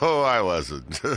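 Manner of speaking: words broken up by giggles and laughter. Asked whether they were joking, a character denies it, laughing while speaking. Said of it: "Then why are you laughing?".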